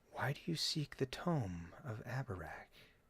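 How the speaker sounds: very quiet, hushed, gentle, soft woman's voice. A voice from a darkened hallway questions the party, soft female voice. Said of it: "a soft female voice says".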